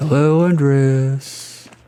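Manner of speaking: toneless, level monotone, name drawn out. A character greets Andres, in a monotone voice. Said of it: "Don't you take my monotone voice".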